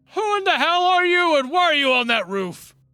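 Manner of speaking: loud yell, pitched way high. Voicing a guard who questions someone on a roof: guard yelling up. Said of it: "a guard kind of yell up".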